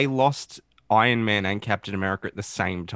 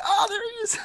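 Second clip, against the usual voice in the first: very high, thrilled, excited shout. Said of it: "and I was like".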